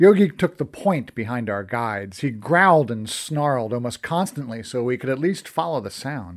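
plain

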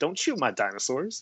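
ordinary talk, nothing marked

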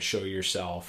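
ordinary talk, nothing marked

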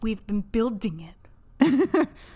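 mock odd delivery, very slow, drawn-out, eerie.

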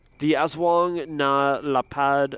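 Spanish accent, very drawn out. Naming a creature while describing its habits: Spanish accent on the name. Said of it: "a Spanish accent on everything".

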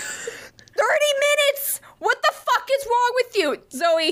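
put-on very high, shrill, upset yelling. Speaker retells a moment while someone laughed at her, retelling yelling at a clock. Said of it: "I'm like yelling at this clock".

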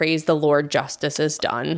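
plain

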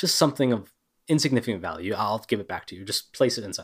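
ordinary talk, nothing marked

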